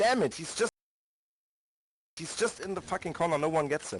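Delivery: exasperated, fed-up frustration. Calling out to teammates during a match: frustrated. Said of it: "You can hear the frustration".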